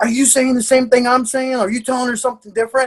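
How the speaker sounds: high, frantic, rapid demanding voice. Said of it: "I'm like".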